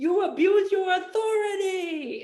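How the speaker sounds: play-acted sobbing, very high crying whine. Retelling what the man in the cop car said to the police chief, imitating someone crying. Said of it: "he's crying it".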